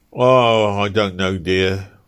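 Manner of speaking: abashed, hesitant, slow and sheepish tone. Easton, asked by Ruth how to spend the money, answers sheepishly. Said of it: "said Easton sheepishly".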